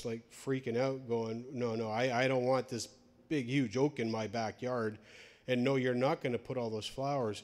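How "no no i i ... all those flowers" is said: usual speaking voice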